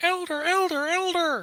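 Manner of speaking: calling out from a distance. Playing a character calling out from far away to get someone's attention, shouting from afar. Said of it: "you hear shouting in the distance".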